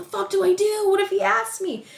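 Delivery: mock, very high-pitched yelling, screaming. Speaker retells screaming at her dogs after he left, retelling screaming at the dogs. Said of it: "I'm like screaming at the dogs first".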